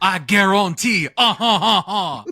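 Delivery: very loud, slow, booming Cajun drawl. Showing the impression asked for of another speaker: Justin Wilson impression. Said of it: "the Justin Wilson".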